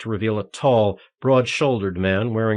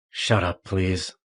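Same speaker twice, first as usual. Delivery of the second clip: whispery deep voice, very calm; 3 semitones lower, 4 dB quieter than usual. Narrator voicing the false detective speaking to the injured Daniel, whispery baritone voice. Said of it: "said in his whispery baritone voice".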